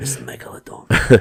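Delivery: whispered movie trailer voice impression. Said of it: "the only Jason Statham impression I can do".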